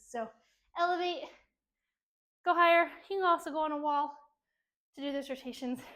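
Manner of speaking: out of breath, catching breath. Speaker cueing an exercise during a workout, out of breath. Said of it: "Catch my breath".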